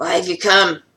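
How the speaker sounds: rough gruff creature voice. Voicing a creature questioning a newcomer about why they came, in a gruff voice. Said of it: "despite the gruff voice".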